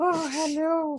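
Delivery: put-on very high, squeaky old-man voice. Describing an actor's old-man role, Christopher Lambert old-man voice. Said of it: "quando faz velhinho, ele fica".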